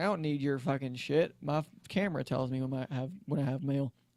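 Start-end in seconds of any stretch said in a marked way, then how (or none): none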